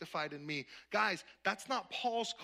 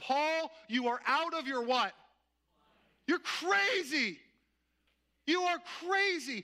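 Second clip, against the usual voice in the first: put-on loud bellowed outburst, pitched up, stretched long; 8 semitones higher, 6 dB louder than usual. Retelling a man's reaction on hearing the gospel, shouting in a loud voice. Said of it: "He shouts out with this loud voice".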